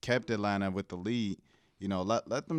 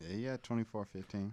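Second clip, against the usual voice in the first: sad, downbeat, glum, much quieter; 8 dB quieter than usual. In an NBA discussion, confirming another speaker's point, sad and downbeat. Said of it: "why you sound so sad about it?".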